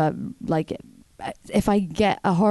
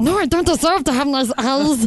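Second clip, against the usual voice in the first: high, pitched-up creature voice; 8 semitones higher, 4 dB louder than usual. Doing a bit about a girl who turns into Smeagol when complimented, Smeagol voice. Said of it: "an impression of a girl who turns into Smeagol".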